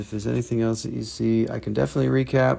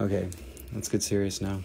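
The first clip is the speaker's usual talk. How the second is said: usual speaking voice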